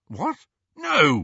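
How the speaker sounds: high, protesting defensive tone. Answering her question about whether he has been possessed, defensive. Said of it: "he said defensively".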